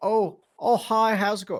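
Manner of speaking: very loud, very high put-on Scottish accent. Retelling what she said when they met in the hallway: imitating Cara in a Scottish accent. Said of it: "I can't talk in a fucking Scotch, I'll sound way too Canadian".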